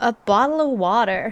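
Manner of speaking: put-on American accent. Trying out a phrase for fun, in an American accent. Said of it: "That's fun to say in an American accent".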